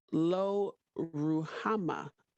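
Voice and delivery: slow and careful pronunciation. A speaker carefully pronouncing a biblical name, said slowly. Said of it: "I have to say it slow".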